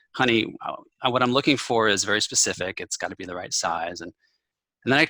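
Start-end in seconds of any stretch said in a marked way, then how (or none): none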